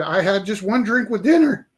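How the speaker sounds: wild manic shout, loud and high. Speaker at a check stop answers the officer's question: retelling a manic yell. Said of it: "I kind of yelled it in a very sort of manic way".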